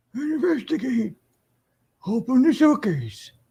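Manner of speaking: put-on old man voice. Playing a game for viewers, switching to an old man voice. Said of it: "Maybe I'll do it in my old man voice".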